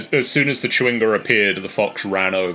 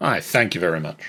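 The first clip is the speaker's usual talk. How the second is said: acted, put-on fox character voice; 3 semitones lower than usual. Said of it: "your best fox voice".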